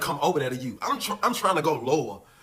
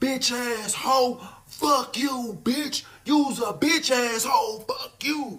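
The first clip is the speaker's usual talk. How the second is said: very high-pitched, loud hollering; 9 semitones higher than usual. Retelling what a man hollered out the window at the rec yard, retelling a holler. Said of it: "he hollering out the window".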